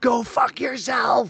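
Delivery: screaming. Retelling screaming at a nurse during a painful treatment: imitating screaming at someone. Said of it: "I'm screaming at her".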